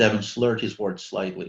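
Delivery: ordinary delivery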